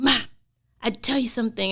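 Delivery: loud scream-whisper. Retelling a child's phone call, imitating a loud whisper. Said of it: "screaming, whispering, you know how kids do that?".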